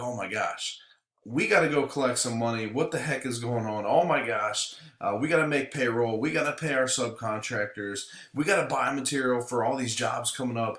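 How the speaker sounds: ordinary delivery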